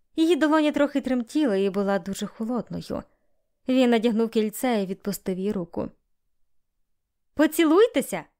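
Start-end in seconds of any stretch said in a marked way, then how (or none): 7.3-8.2 high-pitched exclamation. One of the guests calls out to the couple after the ring goes on; exclaiming. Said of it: "вигукнув хтось із гостей".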